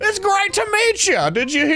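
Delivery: mock starstruck, high, slow gushing fan voice.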